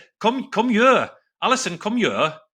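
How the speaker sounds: failed put-on Welsh accent. Admitting to being terrible at accents and trying one on the Welsh wife: bad Welsh accent. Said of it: "When I try to do a Welsh accent".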